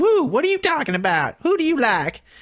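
very high, mocking put-on voice.

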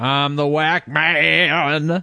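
loud, high, slow seventies DJ voice, stretched "man". Introducing yourself to the show's listeners: Wolfman Jack-style seventies DJ voice. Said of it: "You sounded like some seventies rocker there".

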